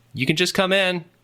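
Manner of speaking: very high yelled reply. Voicing someone inside answering a knock on the door: yelling back. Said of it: "you hear a voice that yells back".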